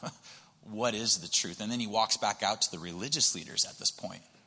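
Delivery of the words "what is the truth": low, falling snarky retort. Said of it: "kinda gives a snarky response going".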